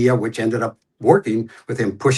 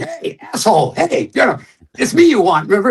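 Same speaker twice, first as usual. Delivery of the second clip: very high-pitched hollering yell; 12 semitones higher, 4 dB louder than usual. Describing a film scene where a lead character calls out to him, retelling a yell. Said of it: "he's yelling".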